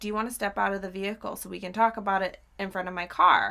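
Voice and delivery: normal talking voice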